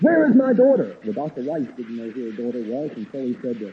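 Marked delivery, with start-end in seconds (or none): 0.0-0.9 very rough, gruff demanding voice. Retelling how a mother demanded her daughter from the doctor, retelling a very gruff voice. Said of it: "in a very gruff voice".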